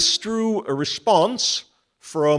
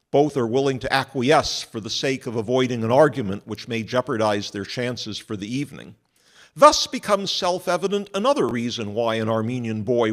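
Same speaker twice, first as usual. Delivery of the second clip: usual speaking voice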